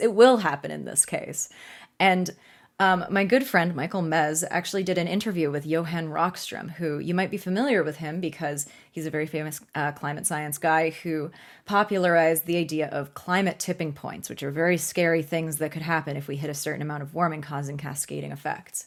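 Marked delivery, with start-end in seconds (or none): 0.0-1.5 will emphasized. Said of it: "It could happen in this case".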